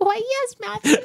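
put-on high, slow baby voice.

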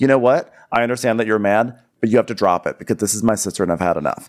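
ordinary delivery

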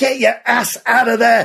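high, full-throated scream at the top of lungs. Reading a man charging ashore under gunfire, screaming at men lying paralysed: screamed. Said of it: "he screamed at men lying paralysed".

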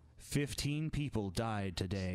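grave, slow, somber newsreader delivery. Mocking how another speaker read the news: imitating somber plane-crash news tone. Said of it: "talking about, like, you know, a plane crash".

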